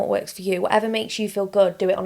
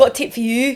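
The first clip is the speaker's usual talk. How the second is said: loud, put-on Leeds accent on every word; 4 semitones higher, 5 dB louder than usual. Mimicking the other speaker's line back at them: imitating a Leeds accent. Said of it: "spending too much time in Leeds with this accent".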